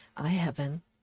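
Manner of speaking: saying it very quietly. Admitting they have not finished pieces before, saying it very quietly. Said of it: "I'm saying that very quietly".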